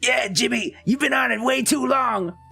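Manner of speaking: high-pitched, cartoonish character voice. Showing what you would say to Jimmy if you could do it, attempt a Sheen voice. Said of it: "If I could do a Sheen voice, I'd be like".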